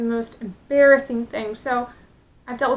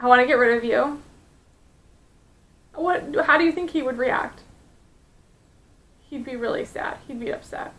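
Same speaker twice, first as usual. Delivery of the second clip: choked-up voice catching with emotion. Talking about a teacher telling a five-year-old boy he is unwanted: choked up. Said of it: "I'm getting choked up now".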